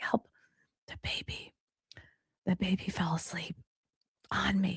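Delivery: slow, hushed, urgent, barely voiced stage whisper. Retelling a call from the husband while the baby sleeps: imitating a stage whisper. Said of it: "he's doing the stage whisper 'cause the baby's sleeping".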